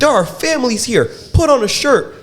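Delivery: very high shrill yell. Retelling a man yelling at a shirtless guy doing yoga, imitating a man yelling. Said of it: "This man is still yelling from up here".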